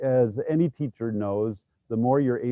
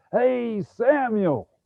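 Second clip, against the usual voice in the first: put-on high, loud little-girl yell; 12 semitones higher, 4 dB louder than usual. Retelling a little girl at a school calling out as god, retelling her loud yell. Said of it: "yell out really loud".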